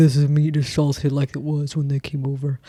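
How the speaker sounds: low, deep, put-on manly voice. Imitating a Pilgrim site guide: low, deep manly voice. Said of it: "Why am I talking so low and in a deep, manly voice?".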